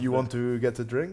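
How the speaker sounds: put-on French accent in English. Speaker demonstrates English spoken with a French accent. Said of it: "speaking in a French accent?".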